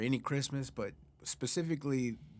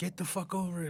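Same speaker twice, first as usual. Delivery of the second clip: irritated, angry, pitched-up brush-off; 6 semitones higher than usual. Retelling what dad said about the missing gift: imitating an angry dad. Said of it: "he's all pissed off".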